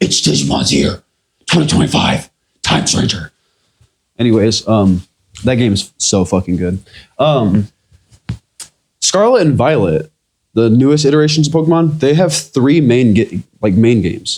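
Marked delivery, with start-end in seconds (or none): 0.0-3.3 rough, gruff vigilante voice. Speaker hyping a game's release year, in Batman voice. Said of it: "I'll say in Batman's voice".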